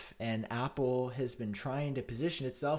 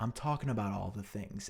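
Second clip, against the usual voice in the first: low, flat, matter-of-fact deadpan; 4 semitones lower than usual. Retelling what she said when asked what she was talking about: mimicking her deadpan reply. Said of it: "she would just deadpan look at you and say".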